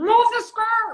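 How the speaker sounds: very high, very loud, shrill scream. Describing a clip with the crew, the speaker re-enacts their own yell. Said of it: "The one where I'm yelling".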